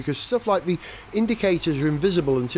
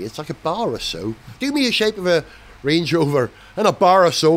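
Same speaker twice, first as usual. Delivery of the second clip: slipping into a put-on Northern Irish accent; 4 dB louder than usual. Reviewing a car's design, speaking in a put-on Northern Irish accent. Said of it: "I don't know why I'm doing a Northern Irish accent".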